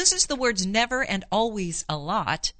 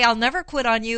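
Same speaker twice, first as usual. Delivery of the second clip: ordinary talk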